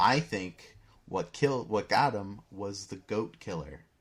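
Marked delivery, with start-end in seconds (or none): none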